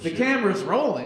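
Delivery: ordinary delivery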